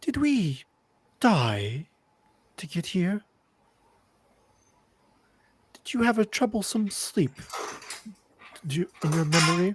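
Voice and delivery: soft hushed half-whisper, slightly high. In a role-play, a character half-whispers to Morgan while following at a distance: half-whispering. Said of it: "I'll kind of whisper to Morgan".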